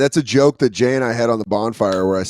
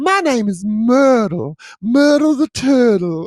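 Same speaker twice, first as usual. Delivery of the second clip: very high, very slow Southern belle drawl; 13 semitones higher than usual. Voicing the dog as she gets up and introduces herself, in a Southern belle drawl. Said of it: "we give her a little Southern belle".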